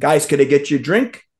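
ordinary delivery

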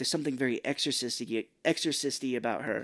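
ordinary delivery

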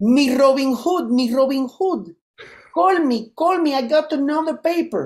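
put-on Spanish accent. Retelling a woman's voicemail messages, done in a Spanish accent. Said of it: "she would say with a Spanish accent, and I'm gonna say how it sounded".

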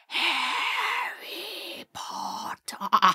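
very high, sinister, ominous, evil whispered call. Retelling Sirius appearing in the crystal ball: Sirius ominous evil whisper. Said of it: "whisper all ominously and evil".

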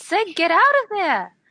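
calling out. In a tabletop game, a player voices her character calling to another character; calling out. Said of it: "She starts her turn by calling out".

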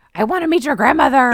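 fast, forceful, pushy, put-on aggressive tone. Retelling what he said next, in a put-on aggressive tone. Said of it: "in the same aggressive tone".

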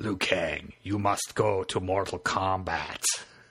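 low, slow, raspy voice with Japanese accent.

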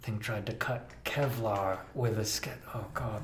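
muttering under the breath. Voicing a character muttering under his breath: muttering under his breath. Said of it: "you hear Doc under his breath".

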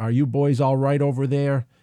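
put-on Massachusetts accent. Reading a listener's letter about his son, in a Massachusetts accent. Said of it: "In his best Massachusetts accent".

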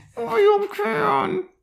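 put-on barely-able-to-talk voice. Picturing a ghost like the Tin Man when first found: Tin Man barely able to talk. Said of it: "but he can barely talk".

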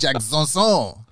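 put-on Italian accent. Saying a name the Italian way, Italian accent. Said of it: "That's the Italian version of it".

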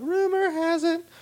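mock very high voice. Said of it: "Says Ellen Page".

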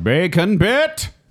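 put-on mad scientist voice, pitched very high. A speaker performs a bit in a mad scientist voice. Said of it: "But why that voice?".

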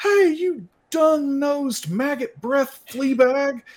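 very high, loud, yelled shout. Voicing a character who shouts taunts at a wolf: shouting.

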